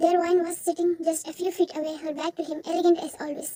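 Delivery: plain reading voice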